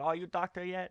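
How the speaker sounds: strict father voice, very high pitch.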